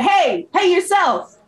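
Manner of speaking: very high, high-pitched, yelled taunt. Answering a goblin in character: yelling at a goblin. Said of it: "I'll start yelling at the goblin".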